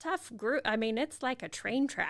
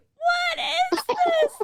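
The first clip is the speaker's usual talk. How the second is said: very high, very loud sobbing cry; 10 dB louder than usual. Retelling how a child tasted wine and started crying: imitating Alice crying. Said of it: "she just started crying".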